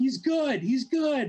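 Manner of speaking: yelling. Retelling a drummer yelling at the security guard: imitating someone yelling. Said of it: "He's yelling at the security guard".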